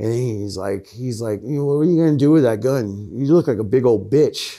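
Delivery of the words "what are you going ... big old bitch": goading, taunting, mocking tone. Retelling how the guy who let them in mocked the gun, imitating someone taunting. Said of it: "he starts talking shit".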